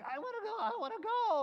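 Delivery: very high, loud squeaky voice. Retelling the David and Goliath story, acting out David volunteering: squeaky David voice. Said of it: "this squeaky voice guy named David".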